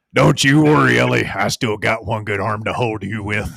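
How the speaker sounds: put-on drawling cowboy voice. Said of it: "That's Sam Elliott".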